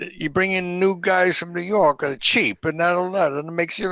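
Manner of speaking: high, angry, heated shouting tirade. Recounting a confrontation with a man, the speaker re-enacts his own words: retelling his own yelling. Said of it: "I started really yelling at him".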